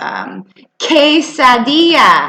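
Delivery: "quesadilla" said slowly, drawn out and stretched.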